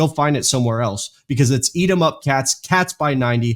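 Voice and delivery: ordinary talk, nothing marked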